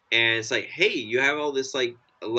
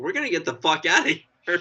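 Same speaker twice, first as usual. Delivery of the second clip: mock livid, furious, fed-up outburst, pitched up; 5 semitones higher than usual. Imagining the wife reacting in the moment: imitating someone livid. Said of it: "She'd be livid".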